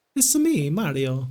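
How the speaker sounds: put-on attempt at an Italian accent. After saying it was Mario, not Luigi: Mario voice, Italian accent. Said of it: "the only time you're ever going to hear me attempt any kind of Italian accent".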